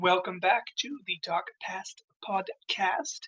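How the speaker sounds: very slow, deliberate, drawn-out speech. Host opens the podcast episode: said really slowly. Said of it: "Saying that really slow this time".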